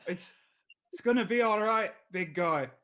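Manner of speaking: put-on struggling stab at Irish accent. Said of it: "what does Irish sound like?".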